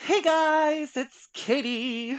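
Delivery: put-on sing-song voice, very slow, drawn-out, high. Repeating the Katie impression for a speaker who missed it: Katie impression. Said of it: "you missed my Katie impression".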